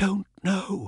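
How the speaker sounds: hushed, soft, high half-whisper. Jude answers the other person, half-whispering back. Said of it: "Jude whispered back".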